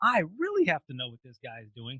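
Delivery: ordinary delivery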